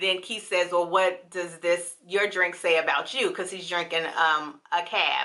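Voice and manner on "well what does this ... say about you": ordinary talk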